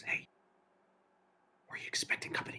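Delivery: barely voiced, hushed, very quiet whisper. Voicing a character who warns the group about approaching figures: whisper. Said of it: "he whispers".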